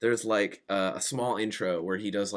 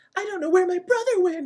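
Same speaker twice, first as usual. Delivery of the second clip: put-on very high, girly, cutesy little girl voice; 7 dB louder than usual. Describing a layered audio clip, imitating a girl's line in a cutesy girl voice. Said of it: "this cutesy girl's voice".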